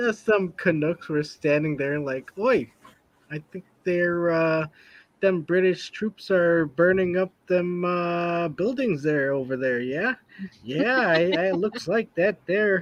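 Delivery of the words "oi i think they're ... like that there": put-on Minnesotan-sounding accent. Acting out Canadian onlookers in a comedy bit, in a Minnesota accent. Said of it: "both the Canadians and the English are Minnesotans".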